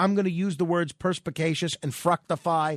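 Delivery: plain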